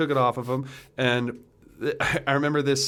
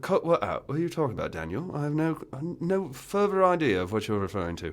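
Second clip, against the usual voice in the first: fake British accent, kept up, with swooping pitch. Retelling a reply to someone who asked them to cut it out, in a put-on british accent. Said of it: "you cannot keep up this British accent".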